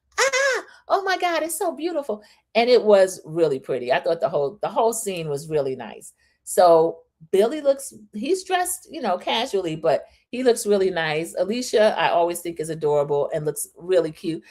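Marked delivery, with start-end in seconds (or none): 0.2-2.3 shrill, very high, thrilled, excited shouting. Retelling how an excited spy yells out the window: imitating someone yelling excitedly. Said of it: "She keeps yelling out the window".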